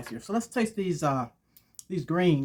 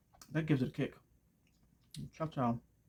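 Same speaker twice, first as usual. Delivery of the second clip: talking through food, mouth full; 6 dB quieter than usual. Taste-testing food on camera for viewers, talking with mouth full. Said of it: "talking with food in your mouth".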